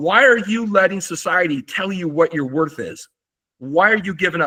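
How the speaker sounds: urgent, intense, fired-up coach-style rallying tone. Retelling urging tired freshman athletes at a high school: retelling screaming at kids. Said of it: "and I'm screaming, I'm going".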